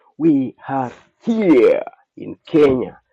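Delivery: loud, slow, belted streamer-style announcer voice. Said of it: "I'll say it like I show speed".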